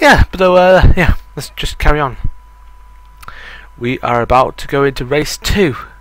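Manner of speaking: winded and out of breath. Speaker apologizing while waiting for race two, out of breath. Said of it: "sorry for me being out of breath".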